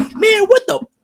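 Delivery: put-on high, loud toddler yell. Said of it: "she's gonna be start running around yelling".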